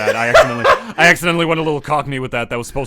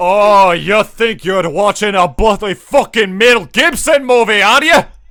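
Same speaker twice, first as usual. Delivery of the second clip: loud, high-pitched put-on Scottish accent; 8 semitones higher, 5 dB louder than usual. After describing a movie scene, addressing the viewer: Scottish accent. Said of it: "do you actually have Scottish ancestors?".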